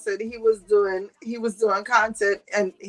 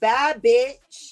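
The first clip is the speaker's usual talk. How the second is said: put-on Georgian accent; 2 semitones higher than usual. Repeating a line just read out, in best Georgian accent. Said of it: "I gotta put on my best Georgian accent".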